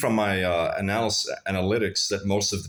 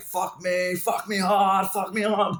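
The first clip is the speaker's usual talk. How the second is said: put-on shrill, slow, stretched-out cries, very high shouting; 12 semitones higher than usual. Retelling what a partner shouted during sex: imitating someone shouting. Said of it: "she's, like, shouting, like".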